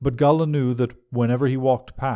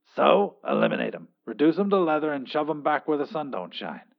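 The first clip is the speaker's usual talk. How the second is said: irritated, annoyed tone; 3 semitones higher than usual. Reading a story, the narrator voices the boss giving an order over a call, annoyed. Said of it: "Pete Abraxas had learned how to manipulate positrons, and in doing so had accidentally overcome the problem of transporting matter over long distances. Fueled by success, he'd set up a jaw-dropping nu".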